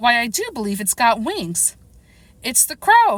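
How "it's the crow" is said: shrill, high, alarmed outcry. Narrator reading a character's line, in a shrill voice of alarm. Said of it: "cried out in a shrill voice of alarm".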